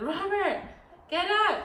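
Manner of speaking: high, loud urgent call. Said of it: "and I said".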